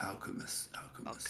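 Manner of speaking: very soft whispered mutter under the breath. A game master voices a character asked about an alchemist in town: whispering under breath. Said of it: "he's just kind of whispered under his breath".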